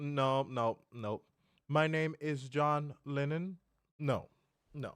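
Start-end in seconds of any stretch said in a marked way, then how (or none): 1.7-3.6 cold-call scammer phone patter. Mocking what a phone scam caller says on the line: imitating a scam caller. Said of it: "Take your scams elsewhere".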